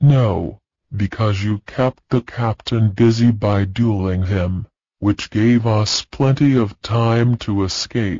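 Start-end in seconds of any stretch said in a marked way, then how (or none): none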